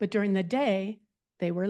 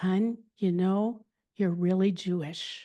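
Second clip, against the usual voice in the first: whispered voice. Retelling what mom whispered while they were a little drunk: retelling mom's whisper. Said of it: "she whispers".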